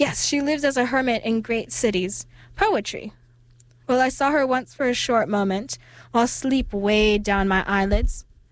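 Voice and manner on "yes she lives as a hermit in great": plain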